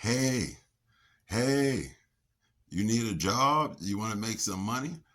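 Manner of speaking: very loud, high-pitched holler. Retelling how a man on a garbage truck called out: imitating a man yelling. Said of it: "he's yelling".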